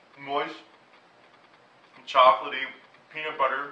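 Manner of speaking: barely able to talk, speaking through full mouth. Tasting the cupcake and describing it, talking with mouth full. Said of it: "evidenced by the fact that I can barely talk right now".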